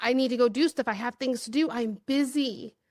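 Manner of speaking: mock anxious, urgent, rushed delivery. Retelling own past inability to sit still: imitating anxious urgency. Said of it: "I had almost this anxious".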